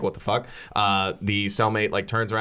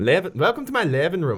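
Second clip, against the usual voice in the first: put-on Irish accent with raised pitch; 7 semitones higher than usual. Warming up before voicing a character: practising an Irish accent. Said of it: "let me try this now that, now that I'm in it".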